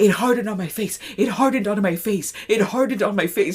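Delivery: said all in one breath. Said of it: "In a breath".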